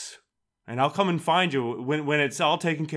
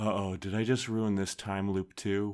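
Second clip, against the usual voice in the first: hushed, private, half-whispered aside; 6 semitones lower, 6 dB quieter than usual. Voicing a character who fears ruining the time loop: half-whispering to himself. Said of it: "whispering to himself".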